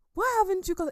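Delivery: high-pitched, loud, demanding tone. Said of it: "And he says".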